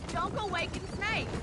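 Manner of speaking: ordinary talk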